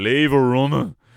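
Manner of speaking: put-on loud hollered shout in a heavy Dublin accent. Retelling one of the lads shouting across the house, in a big dublin accent. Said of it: "in his big Dublin accent".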